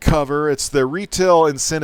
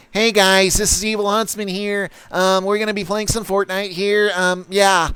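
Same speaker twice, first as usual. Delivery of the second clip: put-on high, squeaky young kid voice; 5 semitones higher than usual. Describing a viewer's gaming channel, imitating a squeaky kid gamer voice. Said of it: "a squeaker voice".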